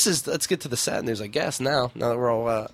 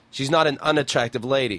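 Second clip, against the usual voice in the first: normal talking voice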